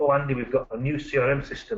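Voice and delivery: ordinary talk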